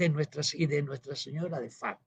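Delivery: hushed, almost half-whispered, as if to oneself. Recounting what the Pope said at a meal, retelling a near half-whisper. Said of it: "susurrándolo casi".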